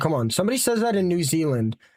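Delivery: ordinary delivery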